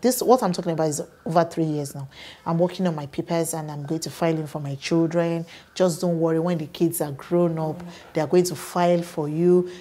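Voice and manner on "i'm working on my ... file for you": usual speaking voice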